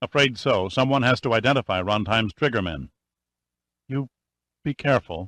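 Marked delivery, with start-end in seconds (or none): 3.9-5.3 stammering, much higher pitch. T.D. answers Pitt, who says he is leaving, stammering. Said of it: "she stammered".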